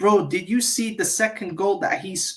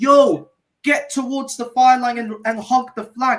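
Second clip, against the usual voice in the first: put-on screaming, yelling coach voice; 4 semitones higher, 6 dB louder than usual. Retelling what Arteta screamed at a player: imitating Arteta screaming. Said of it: "Arteta was screaming at him".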